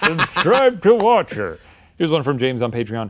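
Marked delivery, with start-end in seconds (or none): 0.0-1.6 put-on old man voice, higher and louder. Joking about a speaker inside the other's body at a funeral: imitating an old man voice. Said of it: "with your old man voice saying".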